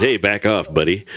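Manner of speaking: usual speaking voice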